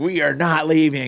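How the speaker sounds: mock six-year-old voice, high, frantic, freaking out. Retelling a son refusing to leave the fishing trip: imitating a kid freaking out. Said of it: "he was freaking out".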